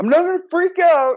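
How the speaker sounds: high-pitched, loud, defiant outburst. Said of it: "I always think of, like, Jerry Maguire".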